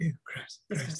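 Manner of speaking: muttered under the breath. Voicing a character cleaning people with magic as he walks by: muttered under his breath. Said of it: "under his breath".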